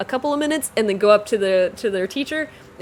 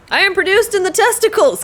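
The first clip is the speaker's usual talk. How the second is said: very high, loud, forceful angry reading; 10 semitones higher, 6 dB louder than usual. Speaker pushing themself to read a line aloud, saying it with anger. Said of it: "I just have to say it with anger".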